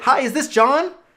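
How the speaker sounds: eager, excited, very high-pitched, loud voice. Demonstrating how to open a phone call to a customer: excited. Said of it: "I'm excited".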